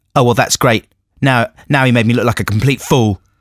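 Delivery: ordinary delivery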